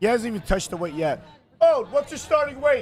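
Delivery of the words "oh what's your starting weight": high-pitched yelled call. Calling out backstage to ask o his starting weight, yelling. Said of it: "Sorry for yelling".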